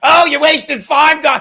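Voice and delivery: put-on shrill, very loud, furious angry shout. Doing someone's comeback after saying they get angry: imitating Chad's angry comeback. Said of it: "let me do the Chad comeback".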